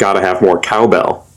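ordinary talk

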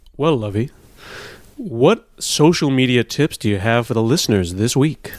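put-on radio broadcaster announcer voice. Restarting the segment for listeners, switching to a radio announcer voice. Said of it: "I'll go with the radio voice".

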